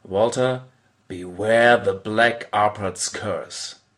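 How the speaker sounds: play-acted slow, dangerously flat, threatening monotone. Recalling grabbing a pawn and looking a player in the eye: retelling a menacing monotone. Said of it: "with a dangerously monotonous voice".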